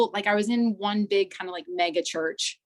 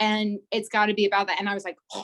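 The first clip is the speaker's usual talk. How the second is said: ordinary talk, nothing marked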